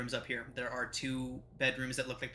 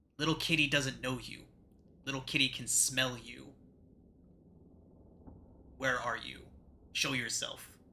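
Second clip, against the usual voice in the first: hissing, almost feline voice through the words. Voicing a feral woman who hisses at intruders: hissing, almost feline voice. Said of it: "She says in a hissing, almost feline voice".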